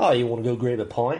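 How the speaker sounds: Australian-accented voice. Speakers trade accents, offering to grab a pint, in an australian accent. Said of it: "that was Australian".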